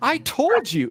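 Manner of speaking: told jumps way up to high pitch. Speaker notices their own voice jump and repeats the phrase: high pitch on 'told'. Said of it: "That told is really high".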